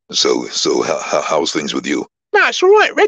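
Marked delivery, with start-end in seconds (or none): 2.3-3.1 very high, very loud put-on voice. Retelling what a neighbour says over coffee: Joe Pasquale voice. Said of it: "And he does that".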